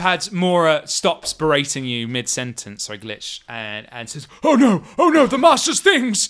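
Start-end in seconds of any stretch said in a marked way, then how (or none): 4.4-6.3 very high, loud, frantic panicked fluster. Voicing a servant seeing the master's jars wobble: panicked character voice. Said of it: "panicking and running around".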